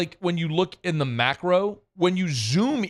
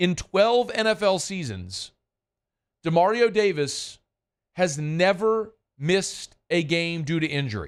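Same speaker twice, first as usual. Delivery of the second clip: slow, unhurried, deliberate, every word clearly enunciated. Making a point so it doesn't get lost: speaking slowly. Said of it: "I'm going to say this slowly".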